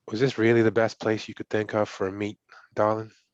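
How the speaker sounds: hushed whisper. Game narrator voicing a figure behind the players at the meet, whispering. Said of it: "you hear a whisper".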